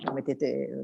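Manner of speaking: hushed soft aside.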